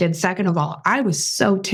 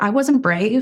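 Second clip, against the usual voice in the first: ordinary delivery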